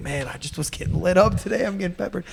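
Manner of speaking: earnest, straight-faced, put-on sincere, honest tone. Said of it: "He's so honest, straight in the face".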